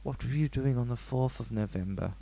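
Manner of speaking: low, soft psychiatrist voice. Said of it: "What is that voice?".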